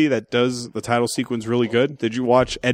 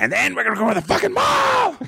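very high, wild outburst, pitch swooping way up; 13 semitones higher than usual. Talking about loving Nick Nolte's voice, the speaker does Nolte going wild. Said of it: "when he goes like wild".

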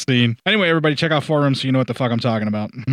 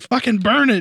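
very high-pitched put-on yell; 9 semitones higher than usual. Recounting a scene where Mac shouts at Childs holding a flamethrower, retelling Mac's yell. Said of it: "Mac even yells at him like".

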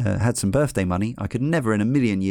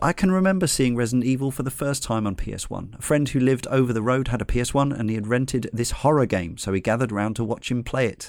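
plain

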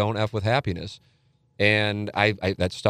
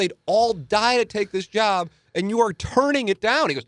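put-on scream, higher; 12 semitones higher than usual. Retelling an agent's reaction to turning down a job: imitating someone screaming. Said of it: "he just starts screaming at me".

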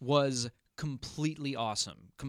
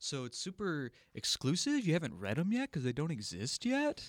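condescending, superior, know-it-all clerk voice; 4 dB quieter than usual. Asking about unreleased books, the speaker puts on a superior comic shop dude voice. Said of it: "my superior comic shop dude voice".

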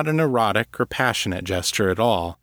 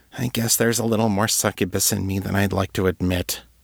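muttered, mumbled under her breath; 2 semitones lower than usual. After apologizing to him, she adds something, muttering. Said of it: "she muttered".

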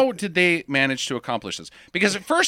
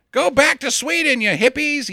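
put-on hollered yell, pitched up; 8 semitones higher than usual. Retelling how a salesman yells at a passing car: imitating a yell out the window. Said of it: "he yells out the window as he passes".

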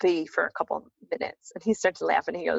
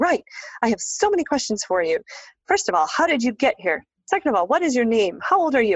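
screamed barrage, pitched high; 6 semitones higher, 4 dB louder than usual. Retelling how a woman fired questions at the speaker, imitating someone screaming questions. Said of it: "she just starts like screaming questions at me".

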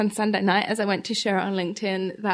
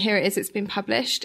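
usual speaking voice

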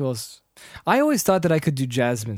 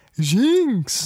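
high, drawn-out creature call, pitched up and stretched; 8 semitones higher, 4 dB louder than usual. Doing Pokemon voices one by one: Jynx voice. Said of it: "that's kinda how it sounds like".

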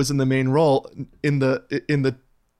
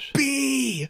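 put-on scream at a very high pitch; 12 semitones higher, 5 dB quieter than usual. Retelling how a character screams at Mother: imitating someone screaming. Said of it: "she's screaming at Mother".

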